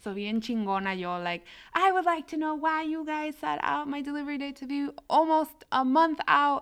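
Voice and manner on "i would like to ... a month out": put-on sassy, demanding, pitched-up tone with attitude. Retelling a call to a company about a late delivery date, with put-on attitude. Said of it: "So then I got an attitude".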